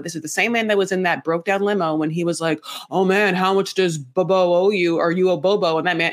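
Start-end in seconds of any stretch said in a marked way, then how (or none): 2.9-5.8 imitated raspy larynx voice. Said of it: "that man with that larynx voice".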